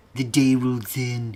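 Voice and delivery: put-on theatrical, old-style horror-host voice. Reading a text aloud in the style of Vincent Price. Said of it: "I'm going to read this in the style of Vincent Price".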